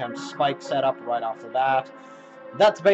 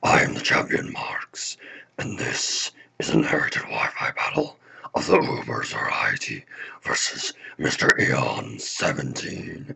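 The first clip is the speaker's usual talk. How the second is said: weird evil villain voice, much lower; 11 semitones lower than usual. Opening a Halloween battle video as the champion, in a weird evil voice. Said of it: "my incredibly weird evil voice".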